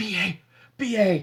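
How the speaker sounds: put-on whisper. Recounting a TV scene where a dead character speaks, retelling a whisper. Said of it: "he whispers to, he goes".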